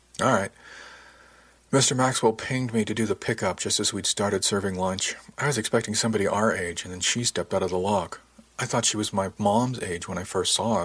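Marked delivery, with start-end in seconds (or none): none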